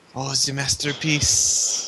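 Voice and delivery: put-on slow, French-accented mutter. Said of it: "begins muttering about".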